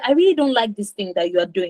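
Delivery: ordinary delivery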